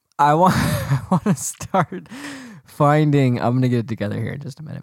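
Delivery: giggling through the words, struggling to recover from laughing. After a slip of the tongue, trying to regain composure while laughing. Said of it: "I'm crying".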